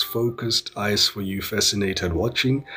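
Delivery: ordinary delivery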